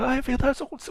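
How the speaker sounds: mock, very high-pitched, desperate sobbing. Retelling a TV scene where a daughter answers: imitating desperate crying. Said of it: "começa a chorar também desesperada e fica".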